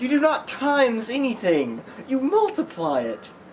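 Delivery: high-pitched, loud, defensive ranting.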